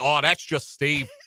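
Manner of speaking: put-on Australian accent, high and slow. Retelling how people there talk about huge spiders, in an Australian accent. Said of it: "Dan can on Australian accent".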